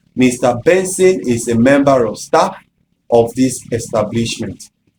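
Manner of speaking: ordinary talk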